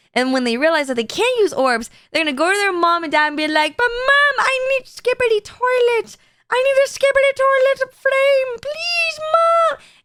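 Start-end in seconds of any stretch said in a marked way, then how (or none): 3.8-9.8 very high, slow put-on child voice. Speaker acts out a kid begging their mom, imitating a kid's voice. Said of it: "I don't have a good kid's voice".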